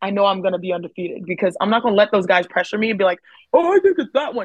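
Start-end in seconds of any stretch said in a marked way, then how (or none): 3.5-4.5 stock brutish male voice. Imitating the guys who pressure him, in a brutish stereotypical male voice. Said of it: "Why is your like stereotypical male voice so so brutish?".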